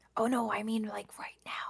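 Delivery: hushed, soft whisper. Clarifying what was meant in a conversation, whispering. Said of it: "why are you whispering?".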